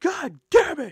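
shrill, very high, loud yelling. Frying wings, the speaker retells how a man yelled from up front, retelling a yell. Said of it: "he he's yelling up front".

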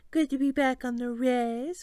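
syrupy, sugary-sweet, taunting tone. During a group tour, one of the girls calls out to another girl in a sweet voice. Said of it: "one asked in a sweet voice".

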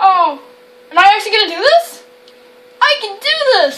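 high-pitched, frightened voice. Streaming a game, talking oneself into going ahead, so scared. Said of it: "I'm so scared".

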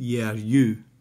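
ordinary talk

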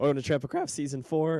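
voice cracking and breaking. Giving a little welcome speech for the new season, voice cracking. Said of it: "My voice cracked".

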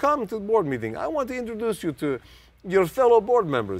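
put-on Russian-accented speech. Retelling what a physicist said about a board meeting: thick Russian-type accent. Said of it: "he had a very thick Russian type accent".

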